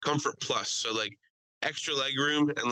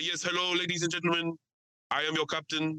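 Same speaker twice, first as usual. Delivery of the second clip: put-on heavy, thick South African accent; 4 semitones higher than usual. Speaker retells a plane pilot's announcement, in a thick South African accent. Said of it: "an extremely thick South African accent".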